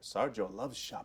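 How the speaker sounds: put-on cat-person character voice. Asked to flip some shop items for the group, the speaker answers: Khajiit voice. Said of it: "That's my that's my uh, Khajiit voice".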